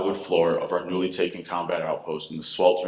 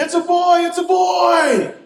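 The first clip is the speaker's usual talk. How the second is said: excited scream, very high, very loud, slow; 10 dB louder than usual. Retelling hearing the baby is a boy: retelling a scream. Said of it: "I began to scream".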